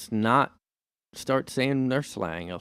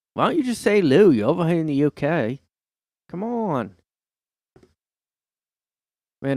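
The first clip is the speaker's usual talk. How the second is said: fake British accent, laid on, pitched up; 5 semitones higher, 5 dB louder than usual. Speaker imitates British people teasing an outsider's words, in a put-on British accent. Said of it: "The less you do the British accent".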